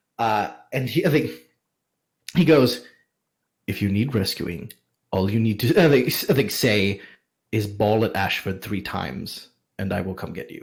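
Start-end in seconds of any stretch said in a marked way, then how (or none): 3.7-10.6 put-on whisper, much lower. Retelling how a man leaned in to pass her a message, retelling a whisper. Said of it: "he leans in to whisper".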